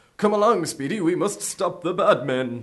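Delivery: put-on cheesy 1940s hero voice. Mocking how old comics sounded: put-on cheesy 1940s hero voice. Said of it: "the forties cheesy tone of".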